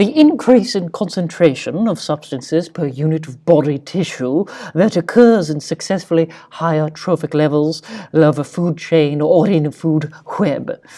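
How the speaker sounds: put-on fancy, refined, high-class posh voice. A speaker explaining the food chain, reading out a formal definition in a fancy voice. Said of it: "so I used my fancy voice".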